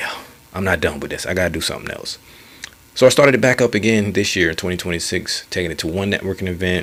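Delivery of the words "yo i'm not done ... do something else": usual speaking voice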